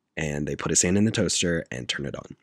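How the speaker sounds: ordinary talk, nothing marked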